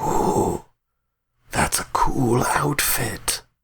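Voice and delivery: slow, hissed, snakelike drawl. Game master voicing a guild figure greeting arriving players, hissing voice. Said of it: "with like a sort of like hissing voice".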